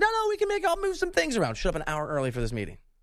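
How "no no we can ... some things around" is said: high, eager, accommodating reassuring voice. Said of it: "He's like".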